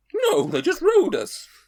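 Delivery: very high, loud pantomime horse voice. Playing a nameless horse answering someone who asks its name, horse voice. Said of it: "Want you to do the voice as well".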